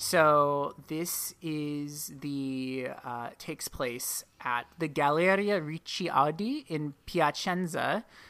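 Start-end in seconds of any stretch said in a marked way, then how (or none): 4.8-8.0 terrible put-on Italian accent on the names. Walking a listener through a timeline, naming the place in a terrible Italian accent. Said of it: "that's my terrible Italian accent".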